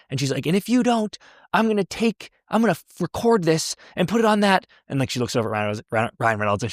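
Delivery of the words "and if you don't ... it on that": shrill, very high screaming. Retelling a movie scene where the character is screaming at somebody: imitating Sandra Bullock screaming. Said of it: "screaming at somebody".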